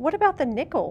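insistent, demanding, loud, high-pitched voice. Narrating a story, one character questions another, demanding. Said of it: "demanded Mike".

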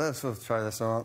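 plain

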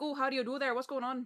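Pennsylvania Dutch-accented speech.

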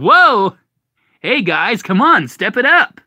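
very high, loud cartoonish hedgehog voice. Asked to do the Sonic voice again during a chat; Sonic voice. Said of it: "Do your Sonic voice again".

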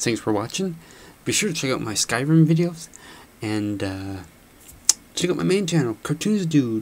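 soft voice. Gamer closing an episode, thanking viewers and pointing to his channels, quiet. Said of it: "sorry I'm being quiet this episode".

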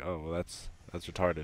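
ordinary talk

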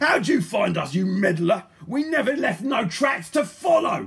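very loud, furious, spat-out outburst. Mr. Gum, being arrested by Polly, spins round on her, furious. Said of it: "spinning round in fury".

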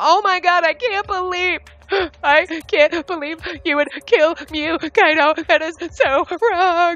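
high, put-on shocked disbelief. Acting out the trusted detective's fake accusation: imitating fake shocked accusation. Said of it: "and you're like".

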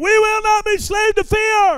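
loud, high, forceful, emphatic voice meaning every word. Leading listeners in repeating a line after some said it weakly: said like you mean it. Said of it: "Say it like you mean it".

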